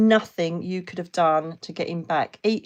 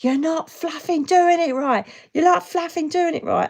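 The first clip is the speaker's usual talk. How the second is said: put-on very high scream, repeated twice; 10 semitones higher, 4 dB louder than usual. Retelling a failed resuscitation attempt: imitating own past screaming. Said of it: "I was screaming".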